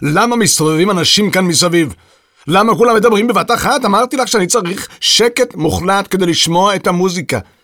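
roaring complaint. The wild fellow at the piano yells at the people around him: roaring. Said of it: "שאג הברנש הפרוע ליד הפסנתר".

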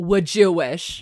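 put-on loud, thick New Jersey accent, laid on heavily. Retelling a movie scene, quoting a woman in a thick Jersey accent. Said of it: "in a really thick Jersey accent goes".

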